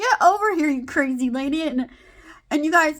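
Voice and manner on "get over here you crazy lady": playful yell, higher. Telling friends about picking up her mom, acting out a playful yell. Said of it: "I'm all honking at her. I'm like".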